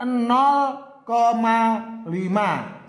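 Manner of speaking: "nol koma lima" read very slow, deliberate, drawn out.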